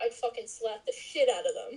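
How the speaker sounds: usual speaking voice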